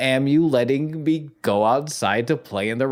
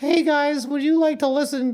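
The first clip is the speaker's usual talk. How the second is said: put-on very high, childlike kiddie falsetto. Mocking how someone messages people by email: very childlike falsetto. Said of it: "In a very childlike".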